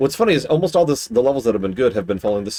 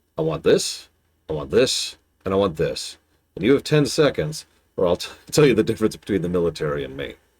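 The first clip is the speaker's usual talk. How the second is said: understated, restrained, downplayed delivery; 3 semitones lower than usual. Retelling what someone said after leaning down, in a pretty quiet voice. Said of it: "said in a pretty quiet voice".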